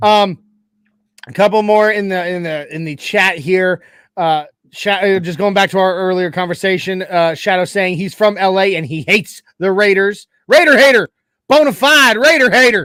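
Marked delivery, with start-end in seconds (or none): 10.5-12.9 put-on Tennessee accent, laid on thick. A streamer responding to a chatter who hates the Raiders, thick Tennessee hick accent. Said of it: "the Tennessee accent".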